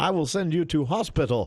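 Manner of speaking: high put-on movie-hero American accent. Describing a hunky-guy action movie, the speaker voices its hero: put-on American accent. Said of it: "American accent that's slightly better than Gerard Butler".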